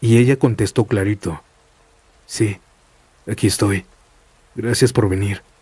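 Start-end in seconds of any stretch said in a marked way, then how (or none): 2.3-5.4 sounding relieved. Reading a story, the trapped girl answers the rescuers: relieved tone. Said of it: "con un tono ya de alivio".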